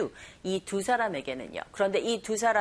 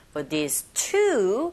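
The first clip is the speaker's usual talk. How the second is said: very slow, two stressed and rising. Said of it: "숫자 two는 내용어이기 때문에 to라고 강세 주시고".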